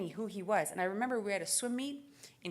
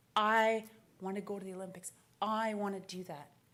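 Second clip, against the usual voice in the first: mock, very dreamy, lost-in-a-daydream delivery. Retelling answering mom about the Olympics as a child: imitating own dreamy voice. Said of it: "I said in a very dreamy voice".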